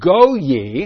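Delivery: high-pitched, loud, sarcastic delivery. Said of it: "He's speaking sarcastically".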